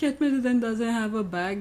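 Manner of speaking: laughing through the words.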